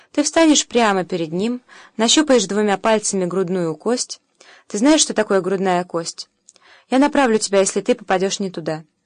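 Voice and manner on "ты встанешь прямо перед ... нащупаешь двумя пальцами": plain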